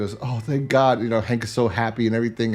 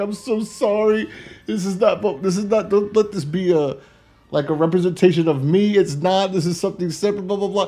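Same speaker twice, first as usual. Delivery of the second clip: put-on crying voice, higher pitch; 9 semitones higher than usual. Retelling a TV episode scene, imitating Hank crying. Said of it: "And he starts crying".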